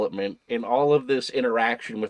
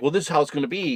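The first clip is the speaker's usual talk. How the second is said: put-on haughty voice with attitude, higher pitch; 3 semitones higher than usual. Retelling how a new character takes charge: imitating a character with attitude. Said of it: "she has all this attitude".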